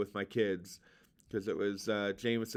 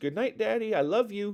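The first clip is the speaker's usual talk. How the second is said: put-on very high, squeaky little child's voice; 11 semitones higher, 5 dB louder than usual. Recalling your last words with Jameson, say his reply to Daddy in Jameson's little squeaky voice. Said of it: "in his little squeaky voice".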